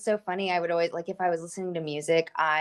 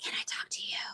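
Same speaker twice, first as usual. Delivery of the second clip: faint, hushed, chilling, eerie whisper. Retelling an episode where a man talks through a window: imitating a whisper. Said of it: "just whispering".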